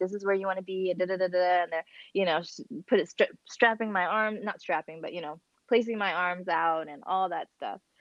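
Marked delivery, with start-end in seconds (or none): 0.0-0.9 mock whispering. Retelling how the doula spoke to him during the C-section: imitating someone whispering. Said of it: "whispering to him".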